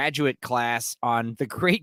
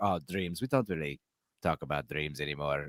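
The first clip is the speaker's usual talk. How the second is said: weird, odd, put-on German accent, laid on; 9 semitones lower, 8 dB quieter than usual. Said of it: "weird, um, like, German accent".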